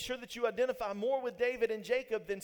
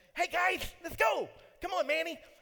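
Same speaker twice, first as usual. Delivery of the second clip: cartoon sloth voice with a lisp, pitched up high; 6 semitones higher than usual. Explaining how to imitate, the speaker performs Sid the sloth voice. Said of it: "that particular lisp down".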